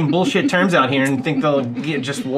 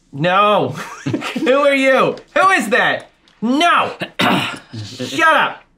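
full-volume, high, very drawn-out scream; 8 semitones higher than usual. In character, screaming back at a praying scroll: screaming as loud as possible. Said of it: "send a message back by screaming as loud as I can".

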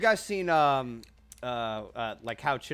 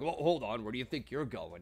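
stern villain voice, cold delivery; 6 dB quieter than usual. Retelling a parody scene where Vader lifts his son back up: imitating Darth Vader. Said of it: "Vader uses the Force to just lift him up".

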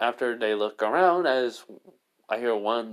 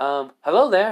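mock perky, cheerful chipper tone, high and raised; 8 semitones higher, 7 dB louder than usual. A character reacts on hearing sisters, in a chipper tone. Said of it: "in a chipper tone like that?".

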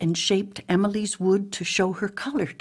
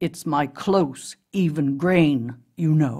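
usual speaking voice

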